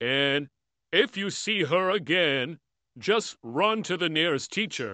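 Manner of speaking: put-on slow talking. Retelling what the principal said: imitating the principal's slow talking. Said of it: "he talks so slow".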